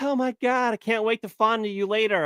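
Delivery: high-pitched, swooning, gushing delivery. Speaker mocks a meme about a woman gazing at Justin Trudeau, mock-swooning Mélanie Joly imitation. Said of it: "And he's like".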